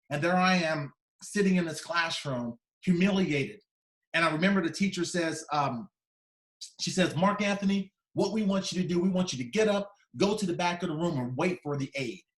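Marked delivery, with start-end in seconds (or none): 7.1-12.2 play-acted demeaning, belittling, humiliating, talking-down tone. Retelling what the teacher told the class: imitating a humiliating tone. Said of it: "they said it in the most humiliating way".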